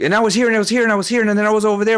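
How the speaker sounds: rapid-fire rushed run-on, very fast and high. Explaining how motivational speakers talk, the speaker imitates one; speaking very fast. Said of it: "they'll speak very fast".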